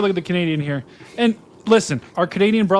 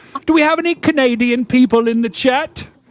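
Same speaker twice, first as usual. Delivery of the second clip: put-on Irish accent; 6 semitones higher, 4 dB louder than usual. Asking the chat whether anyone is Canadian, put-on accent sounding Irish. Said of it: "why did you sound like an Irish person saying that?".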